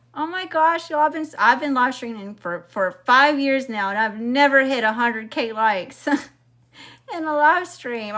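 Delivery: voice catching, choked up, fighting off crying. Thanking viewers for a record number of likes, holding back tears. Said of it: "I'm not gonna cry".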